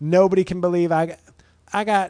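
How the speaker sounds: put-on woman's voice. Quoting a woman's TikTok video in a TikTok woman voice. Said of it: "I'm going to use my TikTok woman voice".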